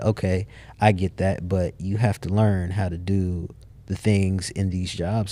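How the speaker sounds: normal talking voice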